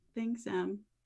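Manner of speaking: soft half-whisper, under the breath. Voicing a quiet girl thanking someone: half-whispering. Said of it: "she just kinda whispers".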